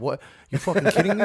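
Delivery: loud, put-on New York accent. Showing that a New York accent sits low: put-on New York accent. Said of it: "New York is, like, down here. It's like".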